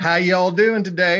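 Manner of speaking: put-on Southern American accent. Retelling how a receptionist greeted them at the front office: southern accent. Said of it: "a receptionist with a Southern accent".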